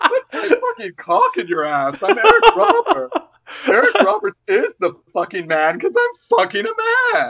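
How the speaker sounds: very high pitch, swooping around. Picturing Paul Lynde as the Mad Hatter in a film: Paul Lynde as the Mad Hatter. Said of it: "It's like fucking Paul Lynde as, like, the Mad Hatter".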